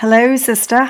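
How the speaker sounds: put-on British accent, done as a bit. A podcast host greets her sister at the start of the show: British accent. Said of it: "we do this whole British accent thing in the beginning".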